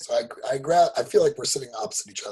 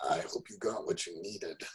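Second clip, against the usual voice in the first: muttered under breath, much quieter and lower; 4 semitones lower, 10 dB quieter than usual. Speaking in character in a role-play, muttered under breath. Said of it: "I sort of say under my breath".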